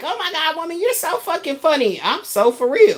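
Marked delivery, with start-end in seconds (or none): 0.0-2.0 mock amused, pitched-up, laughing through the words. Retelling how he responded: imitating him laughing while talking. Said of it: "He laughing like".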